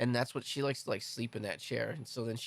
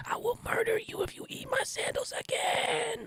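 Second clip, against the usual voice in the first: put-on whispering voice. Playing the dog whisperer threatening a dog over sandals: whispering as the Dog Whisperer. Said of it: "That's why I can whisper this shit to you right in your ear".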